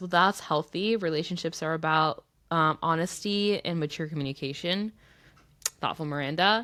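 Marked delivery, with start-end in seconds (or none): none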